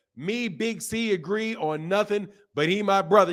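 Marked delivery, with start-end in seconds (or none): none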